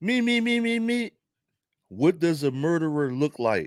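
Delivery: put-on otherworldly alien voice. Asking the audience as if he came from another planet: alien voice impression. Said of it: "That you like my alien impression?".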